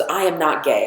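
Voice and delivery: ordinary talk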